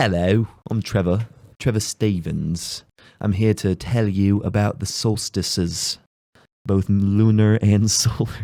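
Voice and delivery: slow, distinguished, educated-sounding British accent. Imitating Trevor in his glasses, introducing himself: Trevor impression in British accent. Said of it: "I can't do a very good, uh, British accent".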